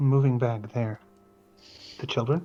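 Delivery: very quiet, hushed, low half-whisper. Retelling what a woman half-whispered to someone, the speaker quotes her, half-whispering. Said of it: "very whisper".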